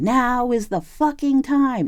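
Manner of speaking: slow, very high-pitched, drawn-out shout. Retelling a vision of O-Ren Ishii from Kill Bill: shouting like O-Ren Ishii. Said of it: "and she's, like, shouting".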